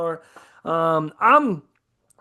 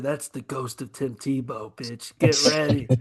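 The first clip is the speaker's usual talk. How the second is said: hushed voice, lower pitch; 6 semitones lower, 4 dB quieter than usual. Imagining someone spooking the quarterback before the game: whispering. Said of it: "someone's gonna whisper in his ear".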